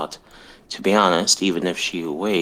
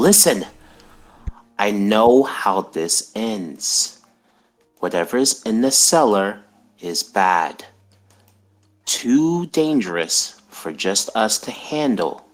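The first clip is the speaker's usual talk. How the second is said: raised, calling-out voice, held back; 4 semitones higher than usual. A character drops the bag and calls out to the other two, half-shouting, not too loud. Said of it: "he kind of like just kind of shouts, not too loud".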